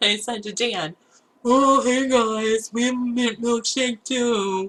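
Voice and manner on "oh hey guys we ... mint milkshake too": goofy, slow, dorky younger-brother voice, nom nom sounds. Retelling reading a burger chain's sign aloud while driving by, in a nom nom boy voice. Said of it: "I read it in that like nom nom boy voice".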